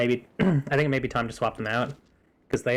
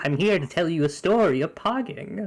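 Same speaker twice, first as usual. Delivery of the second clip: put-on little imp voice, higher; 6 semitones higher than usual. Playing a little imp named Poggers as a bit: little imp voice. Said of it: "I'm the little imp named".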